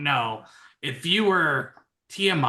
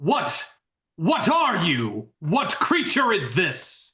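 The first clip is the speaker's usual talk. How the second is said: changed voice of a strange creature; 3 semitones higher than usual. Voicing a creature whose form stays unchanged as it speaks: booming creature voice. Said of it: "but the voice does".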